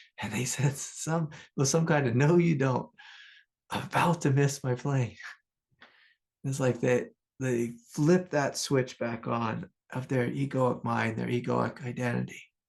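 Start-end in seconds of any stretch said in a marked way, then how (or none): 2.2-5.2 acted, mock-panicked voice. Retelling what someone shouted at a man who kept going, imitating a panicked voice. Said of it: "he heard like panic in their voice".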